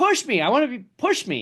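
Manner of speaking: very high, swooping, insistent, demanding yell. Acting out a racer whose demand was just refused, imitating someone yelling. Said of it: "he's yelling like".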